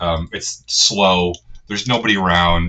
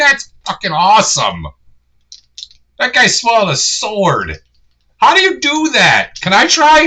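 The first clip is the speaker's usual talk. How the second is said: put-on very high, very loud, swooping street-kid voice; 14 semitones higher, 6 dB louder than usual. Voicing a kid amazed by a sword swallower: street urchin kid voice. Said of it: "the kid's like".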